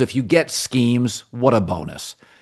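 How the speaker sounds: ordinary talk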